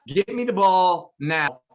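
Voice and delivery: normal talking voice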